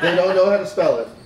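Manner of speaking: words said through a laugh.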